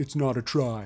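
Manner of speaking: teasing put-on voice. Speaker breaks into a Prime impression, then asks how good it is. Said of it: "That's my Prime impression".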